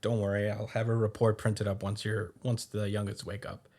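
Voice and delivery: ordinary talk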